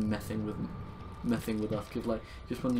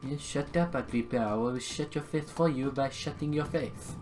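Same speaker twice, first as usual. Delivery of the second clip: over-the-top, exaggerated put-on French accent; 4 semitones higher than usual. A gamer in a put-on persona talks to agrippa; exaggerated french accent. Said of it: "Still very much French".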